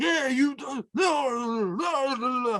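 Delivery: very slow, drawn-out, words mumbled together. Retelling a stranger's reply in the road: imitating someone mumbling. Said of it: "he's mumbling".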